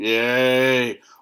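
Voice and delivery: put-on bored monotone, low, flat and drawn-out. Imitating bored movie extras cheering: imitating a monotone bored cheer. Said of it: "Monotone and bored".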